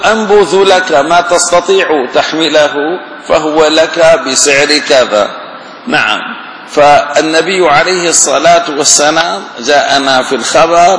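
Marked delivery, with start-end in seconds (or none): none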